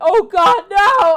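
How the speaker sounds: very high, very loud, shrill cry of agony. Voicing victims attacked inside the cavern, screaming in pain. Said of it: "screams and shouts".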